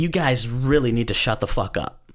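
ordinary talk, nothing marked

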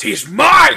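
very loud, high, snarling roar. Voicing a character charging at the sheriff: snarling. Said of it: "Gideon snarls. He goes".

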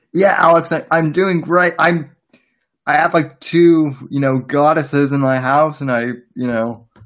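high, loud, amped-up, hyped voice.

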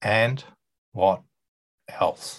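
toneless, flat, mechanical robot voice. Coaching listeners on a follow-up question, showing how not to ask it: robotic. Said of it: "You'll sound like a robot".

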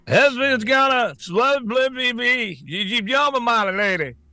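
put-on slurred speech. Repeating exactly what a man said, imitating slurred speech. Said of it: "He's slurring one word into the other".

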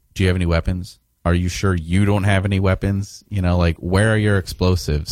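usual speaking voice

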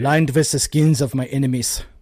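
put-on convincing, villainous supervillain German accent. Joking about a man dressed like a supervillain in a coat: German accent. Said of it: "I did the German accent like way too well".

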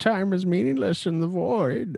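terrible, weakened, hammy villain voice, very high and swooping. Answering a remark about time as the show wraps up, in a terrible, weakened Bane voice. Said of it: "It was a terrible Bane voice".

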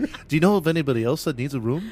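put-on London accent. Retelling someone's question in a story, in a London accent. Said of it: "That's your London accent".

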